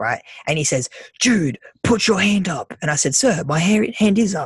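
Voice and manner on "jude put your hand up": mock yelling, high and raised. Retelling how he yelled at the student to put a hand up, retelling a yell. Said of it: "And he yells at me".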